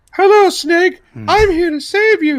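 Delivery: put-on girlish voice, very high, drawn out. Acting out playing alone with an action figure, imitating a girl's voice. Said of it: "imitate a girl's voice".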